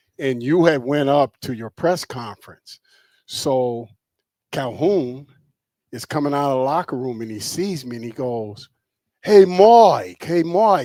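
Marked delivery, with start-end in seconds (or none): 9.2-10.9 put-on very loud, stretched, drawn-out East Coast accent. Act out Calhoun coming out of the locker room and seeing Mike, in Calhoun's East Coast accent. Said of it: "with the East Coast accent".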